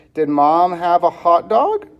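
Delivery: rising question-like lift at the end on dog. Reading a practice sentence aloud to show question intonation. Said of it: "Notice how I changed my voice because of the question mark".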